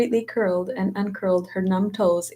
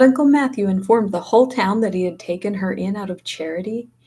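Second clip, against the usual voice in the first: ordinary delivery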